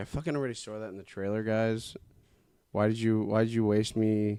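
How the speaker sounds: ordinary delivery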